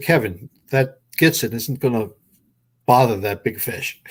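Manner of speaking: ordinary talk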